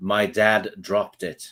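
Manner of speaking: expressionless, level, utterly neutral acted deadpan. Retelling a friend's daughter's reply about a broken controller: imitating an utterly neutral voice. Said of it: "in an utterly neutral voice".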